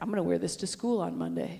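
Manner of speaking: ordinary delivery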